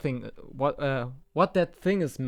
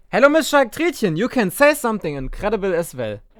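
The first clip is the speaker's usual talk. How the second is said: very loud, high-pitched put-on German accent; 7 semitones higher, 8 dB louder than usual. Greeting another speaker on a podcast: put-on German accent. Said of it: "you don't speak like that, do you?".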